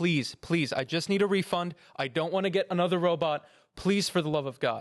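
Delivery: imploring, begging, pleading tone. Retelling a call to customer service: retelling pleading on the phone. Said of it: "begging the person on the phone".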